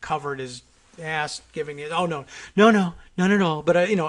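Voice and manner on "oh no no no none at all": unconvincing, put-on manner. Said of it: "in a very unconvincing way".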